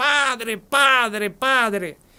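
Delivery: urgent repeated calling, held back, put-on shouting. Retelling how someone began shouting on the phone: imitating someone shouting. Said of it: "empieza a gritar".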